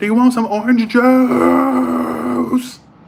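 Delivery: very high, very slow, drawn-out holler. Retelling a woman at a hotel breakfast table calling out to the speaker: retelling a yell. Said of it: "Would you please stop yelling in front of everybody?".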